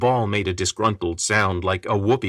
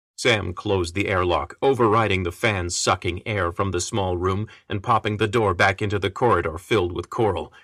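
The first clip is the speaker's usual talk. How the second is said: ordinary delivery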